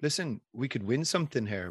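ordinary talk

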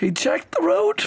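giggling through the words in a very high voice. Reading a story aloud, laughing while talking. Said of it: "I don't know why I'm laughing".

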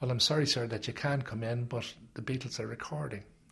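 plain

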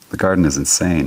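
plain reading voice

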